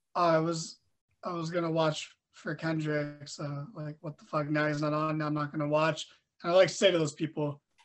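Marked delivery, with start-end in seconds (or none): none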